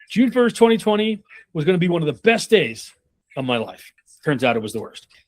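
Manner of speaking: dramatic pause, then final sentence hammered hard. Speaker demonstrating how to deliver a line: pause before the final phrase. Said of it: "that pause right before".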